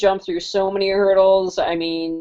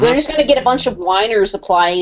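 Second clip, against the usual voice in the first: ordinary talk, nothing marked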